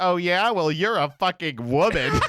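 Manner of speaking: mock snarky, condescending, sneering snide tone. Mocking a snide Reddit guy's reply, in a mock-snide voice. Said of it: "this snide ass Reddit shit where he's like".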